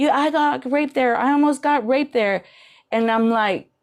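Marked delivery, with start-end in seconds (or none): 0.0-2.4 mock upset screaming outcry, softened and played down. Retelling a woman refusing the shelters: imitating someone screaming. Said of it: "she started screaming at me and my neighbor".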